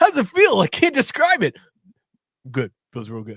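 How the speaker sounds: composed, formal press-conference voice with swinging pitch. Retelling a coach's press conference answer after his first win: Zach Taylor voice. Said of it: "That is Zach Taylor's voice".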